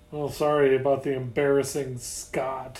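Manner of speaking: ordinary delivery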